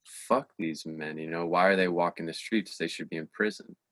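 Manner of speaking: ordinary talk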